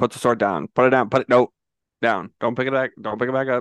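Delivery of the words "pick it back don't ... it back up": ordinary talk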